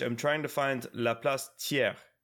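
ordinary talk

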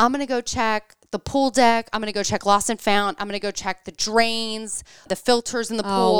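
plain

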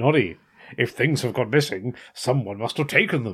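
deep, low, menacing, ominous, looming villain voice. Quoting Big Ears, Noddy's conscience, telling Noddy what to do, in a Darth Vader voice. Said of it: "are you doing Darth Vader there?".

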